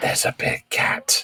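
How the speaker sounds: slow, hushed whisper, very close. Waking sleeping companions by speaking right into their ears: whispering. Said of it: "just whisper directly into their ears".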